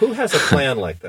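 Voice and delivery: prim church lady voice. A speaker in a policy discussion, in a Church Lady impression. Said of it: "Is this your church lady impersonation here?".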